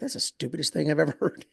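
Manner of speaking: put-on older man muttering. Retelling a remark at a networking table: Glenn muttering under his breath. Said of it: "under his breath".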